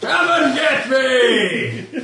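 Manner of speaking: very high, slow, drawn-out taunting shout. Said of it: "You hear him".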